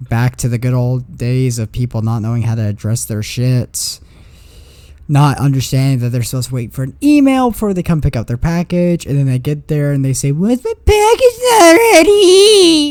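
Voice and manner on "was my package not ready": very high, very slow, shrill voice. Retelling what a customer asks when picking up a package: imitating a customer's voice. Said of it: "In that exact voice".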